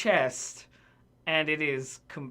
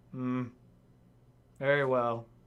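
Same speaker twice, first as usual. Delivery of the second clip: low, dour, stiff butler voice; 5 semitones lower than usual. Voicing a servant who agrees to bring drinks: dour butler. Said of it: "leaves like a dour butler".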